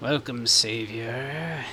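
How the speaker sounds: rasping, drawn-out eldritch creature voice. Narrating a story as an eldritch creature speaks to you, raspy creature voice. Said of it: "it says in a raspy voice".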